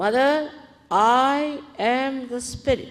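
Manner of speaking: confident delivery. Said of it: "with full confidence again".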